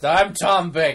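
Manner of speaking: put-on acted drunken voice, dropping the English accent. Admitting the impression lacks an English accent: drunk Tom Baker impression. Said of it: "It doesn't even have an English accent".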